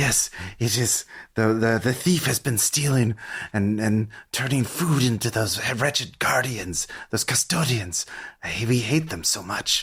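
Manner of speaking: ghoulish creature voice speaking in a whisper. Narrating a scene to a player, voicing a corpse eater, whispering corpse eater. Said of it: "So it whispers".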